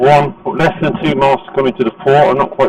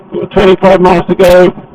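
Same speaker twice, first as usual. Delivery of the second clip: shouting over wind, higher and slower; 6 semitones higher, 5 dB louder than usual. On a windy motorway drive, the speaker updates listeners on the distance left: shouting over the wind. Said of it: "I'm shouting because you probably can't even hear me".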